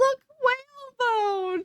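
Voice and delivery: excited high cry, slowed.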